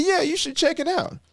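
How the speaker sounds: thick, strong Southern drawl, very high. Speaker retells a coach recommending a speaking organization, imitating his strong Southern drawl. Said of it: "It's just a strong Southern drawl".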